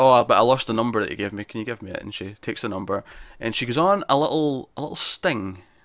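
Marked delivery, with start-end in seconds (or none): none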